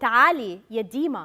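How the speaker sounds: deep, loud, loving call in Arabic. Speaker recalling her grandmother calling her as a child, imitating her deep, loving arabic voice. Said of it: "in a deep, loving Arabic voice".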